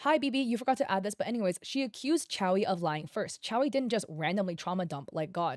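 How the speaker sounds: usual speaking voice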